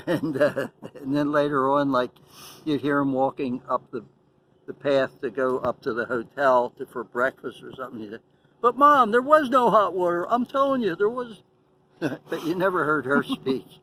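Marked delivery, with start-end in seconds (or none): 8.6-11.4 very high, loud, annoying, obnoxious complaining whine. Retelling what he would say to his mom on the way to breakfast, imitating a loud annoying voice. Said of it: "real loud, obnoxious, annoying voice".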